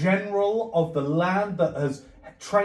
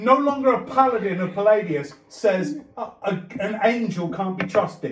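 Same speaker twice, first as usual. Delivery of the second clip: plain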